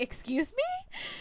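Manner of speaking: high, slow voice of shocked disbelief.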